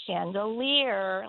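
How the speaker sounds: chandelier said very slowly, each syllable stretched out. A parent bends down in front of a salesman and tells their son a word, saying it very slowly. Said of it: "I said it very slowly".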